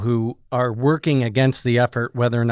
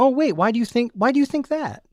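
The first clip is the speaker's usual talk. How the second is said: put-on, exaggerated sweetness, pitched-up, playing-dumb innocence; 11 semitones higher than usual. Speaker demonstrates how they answer someone's racist remark: over-the-top nice, feigned ignorance. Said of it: "I play like over the top nice and ignorant".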